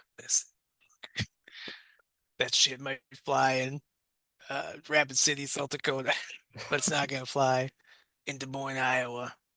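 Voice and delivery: put-on gruff police-chief voice. Speaker voicing his gruff police chief character as Clint Eastwood: Clint Eastwood voice. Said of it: "Clint's my chief, and he says".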